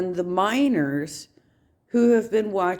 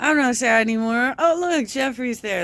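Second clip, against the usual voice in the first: derisive, high-pitched mocking parody voice; 5 semitones higher than usual. Mocking how fast the streamer stopped being sad: mocking Eugenia impression. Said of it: "She's not sad anymore".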